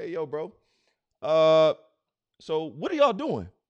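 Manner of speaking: loose, laid-back bro-talk voice. Retelling God finding Adam hiding in the trees: casual God voice. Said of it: "that's how he would say it".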